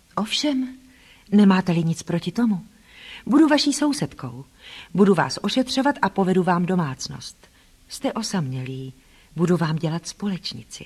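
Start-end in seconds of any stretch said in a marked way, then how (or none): none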